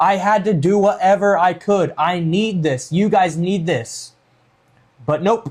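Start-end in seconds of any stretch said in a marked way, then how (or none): 0.0-4.1 dead-earnest, pleading wrestler promo voice. Imitating a wrestler's promo after his heel turn: imitating John Cena. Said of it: "He's like".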